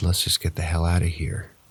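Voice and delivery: ordinary delivery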